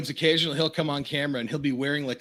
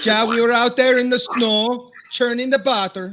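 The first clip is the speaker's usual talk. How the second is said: very loud, high, put-on Finnish accent; 9 semitones higher, 8 dB louder than usual. Mocking how Finnish people talk: put-on Finnish accent. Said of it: "you sound like a Finlander now".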